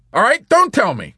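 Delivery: curt, loud, snappish, very high-pitched. Corporal Whitcomb, refused an answer by the chaplain, snaps at him. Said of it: "Corporal Whitcomb snapped".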